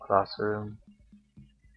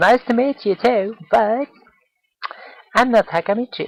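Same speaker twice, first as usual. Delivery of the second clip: put-on high-pitched, loud, bubbly girl voice. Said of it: "accent I should give".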